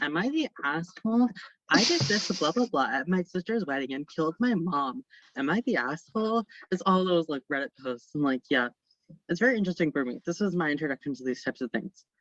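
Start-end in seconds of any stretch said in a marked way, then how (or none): 0.0-6.4 pleasant, slow read-aloud storyteller voice. Describing TikTok accounts that read Reddit posts aloud: imitating a really nice voice. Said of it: "someone with a really nice voice being like".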